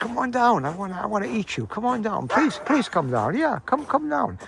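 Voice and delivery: high, pleading, coaxing begging dog voice. Speaker voices her dog chasing a squirrel, voicing a pleading dog. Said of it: "she barks and says".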